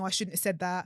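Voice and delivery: plain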